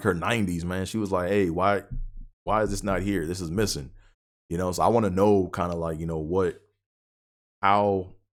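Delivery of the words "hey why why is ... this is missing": ordinary talk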